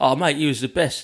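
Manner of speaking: stock gushing fan praise voice. Retelling what people at every gig always say: imitating gig-goers' voice. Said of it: "they always say it in that voice".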